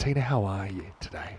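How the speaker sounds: smooth, mellow late-night radio DJ voice. Asking a co-commentator how she feels: late-night adult contemporary radio voice. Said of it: "I'll put on my adult contemporary voice for eleven o'clock at night".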